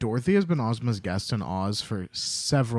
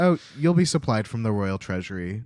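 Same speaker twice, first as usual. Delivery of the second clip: plain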